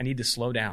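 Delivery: ordinary talk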